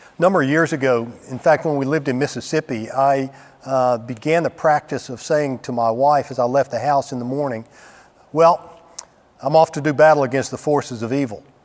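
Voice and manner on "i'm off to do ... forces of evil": ordinary talk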